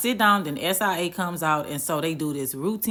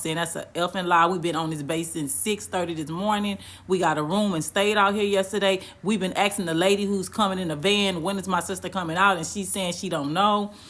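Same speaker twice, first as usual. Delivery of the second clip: ordinary talk, nothing marked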